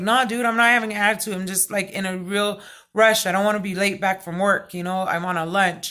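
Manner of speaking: ordinary talk, nothing marked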